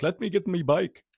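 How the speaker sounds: put-on high-pitched Jamaican accent drifting into an Irish accent. Retelling a night out, quoting a guy who wants his bike, Jamaican accent sounding Irish. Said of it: "Why is this guy like Irish now?".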